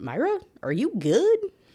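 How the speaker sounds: little robot voice. Retelling a book scene, quoting a little robot: robot voice. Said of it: "in robot speak".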